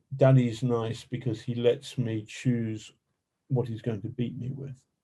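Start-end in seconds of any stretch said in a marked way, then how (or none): none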